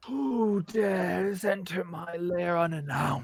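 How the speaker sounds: loud, booming dragon voice. Narrating as the group enters her lair, the speaker voices dragon Vendra. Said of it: "adult bronze dragon of Vendra. She unfurls her wings and she says".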